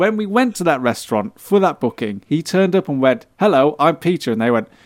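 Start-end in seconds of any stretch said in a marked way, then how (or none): 3.4-4.3 terribly English, very British, proper manner. Retelling a friend arriving at a restaurant, very British manner. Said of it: "he was so British".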